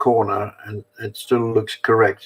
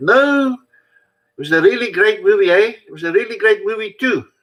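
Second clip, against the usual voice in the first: mocking, very high put-on South African accent; 10 semitones higher than usual. Explaining an old joke accent, the speaker acts out a moviegoer's reply; mocking South African accent. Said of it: "the accent taking the piss out of South Africans".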